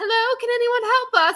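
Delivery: put-on British accent, very high-pitched and loud. Retelling what the British family asked at the bar: imitating a British family. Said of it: "British family comes in and they're like".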